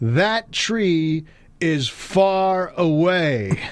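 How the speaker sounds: mock, very high, very slow, drawn-out yell. Retelling repeating a remark to someone who kept saying what, retelling own yell. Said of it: "now I'm yelling some insignificant shit like".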